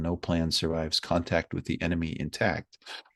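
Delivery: plain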